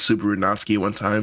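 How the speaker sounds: plain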